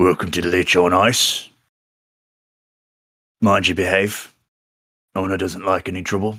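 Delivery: monster character voice. Game master voicing a bugbear who greets the players, bugbear voice. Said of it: "the bugbear just kind of looks down at you all, and he says".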